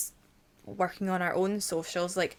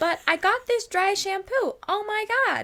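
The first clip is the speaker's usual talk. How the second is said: put-on Southern American accent, higher; 13 semitones higher, 4 dB louder than usual. Retelling an early sponsored video by Blair Fowler: Blair Fowler Southern accent. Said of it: "in her, like, s-, Southern American accent".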